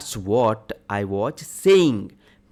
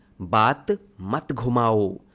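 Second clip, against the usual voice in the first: normal talking voice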